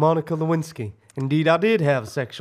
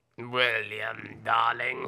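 put-on granny voice, much lower pitch; 5 semitones lower, 7 dB quieter than usual. After reading listener texts, the speaker launches a bit in Etiquette Granny voice. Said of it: "Etiquette Granny".

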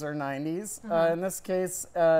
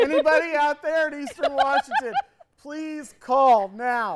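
very high, loud, swooping call-out yell; 10 semitones higher, 5 dB louder than usual. A guest calling out to listeners in Eastern Washington to phone in, yelling. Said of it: "I like how you're yelling".

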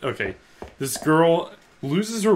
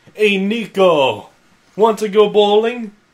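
higher, louder put-on Russian-like accent; 7 semitones higher, 7 dB louder than usual. Doing a voice that sounds Russian, asking Nico to go bowling: Roman voice, Russian-sounding accent. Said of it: "It sounds more like a Russian".

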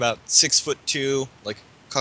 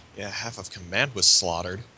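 put-on mutter, lower and quieter; 4 semitones lower, 4 dB quieter than usual. Acting out what he says after a skill roll, a mutter under his breath. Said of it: "he kind of mutters under his breath".

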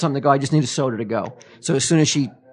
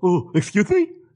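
high, mocking, taunting copycat echo voice; 6 semitones higher than usual. Retelling how teenagers mimicked a question back: imitating a mocking mimicry.

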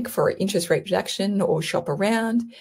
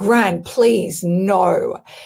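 mock loud screamed pleading, all together; 5 dB louder than usual. Retelling the family begging the grandmother at lunch: imitating screaming. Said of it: "all of us start screaming".

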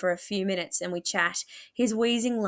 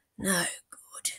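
hushed, breathy whisper; 6 dB quieter than usual. A frail man answers the narrator's morning greeting, whispering. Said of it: "he whispers".

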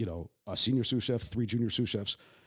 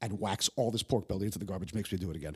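normal talking voice

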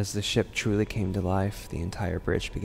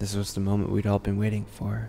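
plain reading voice

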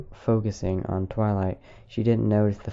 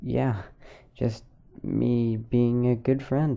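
nervous, with an uneasy little laugh; 3 semitones higher than usual. Answering a friend's doubtful 'really?', with a nervous laugh. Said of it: "Rainbow said with a nervous laugh".

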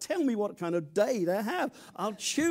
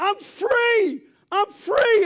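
very loud, booming, very high, slow, stretched bellow; 12 semitones higher, 9 dB louder than usual. Telling a joke about a man just out of prison, retelling a louder shout. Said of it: "And he shouts it more".

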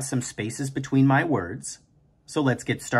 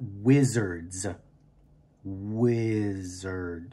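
slow, low, stretched-out word sounded out bit by bit; 5 semitones lower, 4 dB quieter than usual. Showing learners how to stretch out a word to hear its sounds: slow, stretched-out word. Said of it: "we say it slowly".

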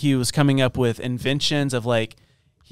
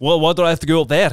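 fake Scottish accent, higher and louder; 3 semitones higher, 5 dB louder than usual. Acting out a story scene, asking what is up there: put-on Scottish accent. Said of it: "I gotta get this in Scotland".

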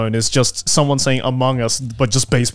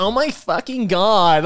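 put-on, high-pitched valley girl accent; 7 semitones higher than usual. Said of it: "like, that kind of vibe?".

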